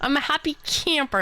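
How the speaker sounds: exaggerated Canadian accent. Repeating own line just said, exaggerated canadian accent. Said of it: "I sounded so, so Canadian there".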